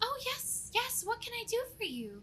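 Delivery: tiny, sweet goblin voice, very high. Game master voicing a goblin woman greeting the players from behind a counter: sweet small goblin woman voice. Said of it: "a sweet small voice that comes from behind the counter".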